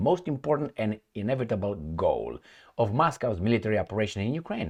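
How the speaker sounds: ordinary talk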